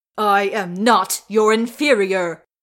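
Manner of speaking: very loud, slow, hateful, spat defiance. Thorin retorts to Thranduil's taunt about his inferiority, spitting with hatred. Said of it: "spits Thorin, his hatred boiling over".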